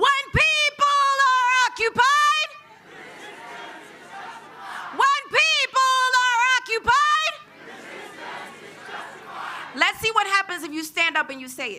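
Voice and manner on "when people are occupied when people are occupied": high, emphatic shout, said like it's meant. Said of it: "you gotta say it like you mean it".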